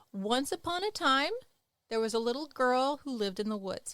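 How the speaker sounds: voice lifts on time, then settles down on woods. A teacher showing students where the comma goes, pitch rising then falling. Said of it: "Notice how my voice went up and it went down".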